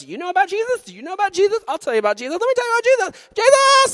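put-on very high, loud, overeager little-kid voice. Retelling how they told everyone about jesus as a kid: imitating eager little kid self. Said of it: "I was this little freak".

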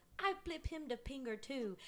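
high-pitched, put-on, comic Filipino accent. Retelling what their mom answered about being flipped off, imitating mom's Filipino accent. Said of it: "she has this really funny accent".

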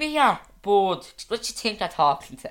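loud, high Finglas-style North Dublin accent. Showing off the accents you can do, a North Dublin accent. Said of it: "I can do like a North Dublin accent".

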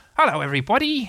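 bright, cheery tone. Arriving through the hedge, he greets everybody cheerfully. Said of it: "said Tigger cheerfully".

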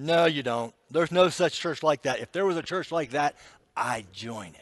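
acted-out dismissive, disbelieving, sarcastic scoffing tone. Retelling a cook's reply in a story: imitating a sarcastic protest. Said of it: "the cook protested sarcastically".

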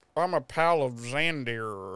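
bad fake put-on Southern accent. Retelling how someone introduced themselves, in a bad fake southern accent. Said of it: "Tries to put on this really bad fucking, like, southern accent".

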